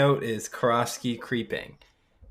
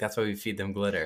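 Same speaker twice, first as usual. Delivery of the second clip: ordinary delivery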